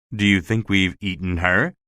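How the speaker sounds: plain reading voice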